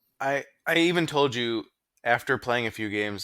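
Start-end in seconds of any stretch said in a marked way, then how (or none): none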